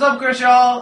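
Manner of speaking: calling out loud and high.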